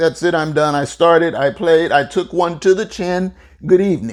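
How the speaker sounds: ordinary delivery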